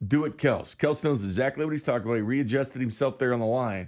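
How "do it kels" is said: plain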